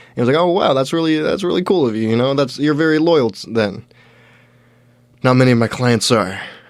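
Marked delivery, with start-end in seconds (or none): 5.2-6.4 mock deflated, thoroughly defeated tone. Retelling what he said about his clients, imitating someone defeated. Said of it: "He said it like very defeated".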